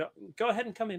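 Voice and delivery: light, high, quick feminine voice. Game master voicing someone calling to the players through a door, in a feminine voice. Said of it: "a feminine voice call from the other side".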